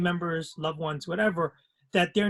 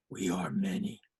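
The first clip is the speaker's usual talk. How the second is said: soft, groggy, hushed murmur in a different voice; 11 semitones lower, 6 dB quieter than usual. Describing an answer that comes in an alternate voice, groggy Batman-like voice. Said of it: "The answer is in such a groggy, alternate voice".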